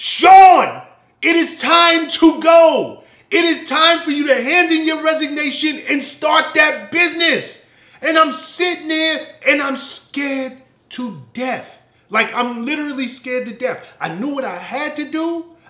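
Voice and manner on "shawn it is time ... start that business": insistent yelling like an inner voice. Speaker acting out what the voice inside them said, retelling a yell. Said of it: "It was like a yell".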